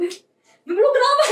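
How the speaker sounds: high, loud, laughing and bewildered.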